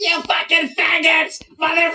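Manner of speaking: shrill, very high hollered outburst. Imitating a man yelling from a crowd: imitating a man yelling. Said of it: "that's a really good impression".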